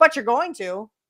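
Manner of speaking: dry, sarcastic comeback delivery. Retelling how Paul Heyman answered someone at his table, imitating Paul Heyman, sarcastic. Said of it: "he said it sarcastically".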